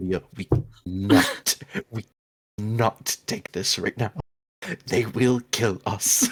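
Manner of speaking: hushed whisper. Pulling Aurelia aside so as not to be overheard: whispering. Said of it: "whispering this as, so as to not be overheard".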